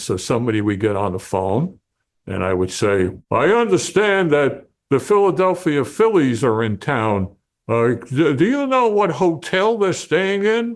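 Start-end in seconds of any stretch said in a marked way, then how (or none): 3.3-10.8 child's put-on adult voice, slower. Retelling phoning a sports desk as a kid, putting on an adult voice. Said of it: "try to make my, my voice sound like an adult".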